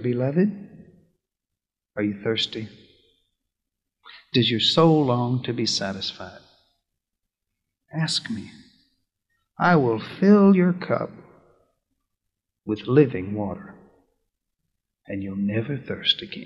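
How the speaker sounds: tender, soft, loving whisper close to the ear. Voicing Jesus calling a listener at the well: Jesus whispering lovingly. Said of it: "Lovingly, he whispers in your ear".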